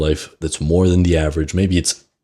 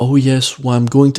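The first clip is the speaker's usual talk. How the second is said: put-on higher-pitched, uncertain voice; 7 semitones higher than usual. Retelling what a friend said after graduating: imitating a higher-pitched, uncertain voice. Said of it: "his voice became higher pitched and more, like, uncertain".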